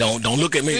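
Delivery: ordinary talk, nothing marked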